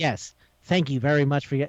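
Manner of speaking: put-on very formal, stiff speech. Retelling an anime scene, quoting a sick student: imitating very formal speech. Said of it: "he's speaking really formal".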